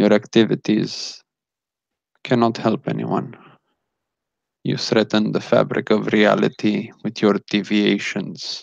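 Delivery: eerie, calm, flat, emotionless robot-like voice. Narrating a scene, the speaker voices a man injecting the listener's character: eerie calm robot-like voice. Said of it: "he speaks like a robot. There's no feeling behind what he says".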